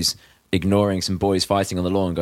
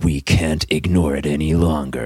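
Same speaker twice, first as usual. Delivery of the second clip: put-on very serious voice, lower, non-ironic; 4 semitones lower than usual. Describing how an ad starts for those who haven't seen it, imitating a very serious voice. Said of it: "really serious, non-ironic voice going".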